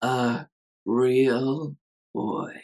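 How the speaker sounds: quiet whisper. Describing a film scene, speaker acts out a character in bed, whispering to himself. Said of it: "he whispers to himself".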